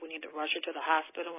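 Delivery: normal talking voice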